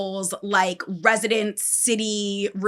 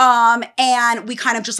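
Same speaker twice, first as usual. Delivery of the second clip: ordinary delivery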